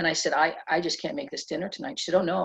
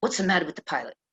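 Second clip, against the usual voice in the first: put-on New York Bronx accent. Retelling what the woman sitting next to you said, in a bronx accent. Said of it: "in this Bronx accent".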